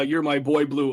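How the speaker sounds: plain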